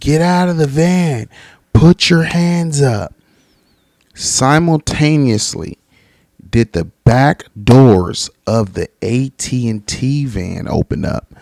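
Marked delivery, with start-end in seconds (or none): 0.0-3.1 mock barking cop voice, high and yelled. Retelling a cop ordering a man out of a van: imitating a cop yelling. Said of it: "as the cop's yelling".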